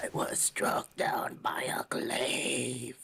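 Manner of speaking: very rasping voice. Voicing a dead man answering how he died: very raspy voice. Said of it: "he says with a very raspy voice".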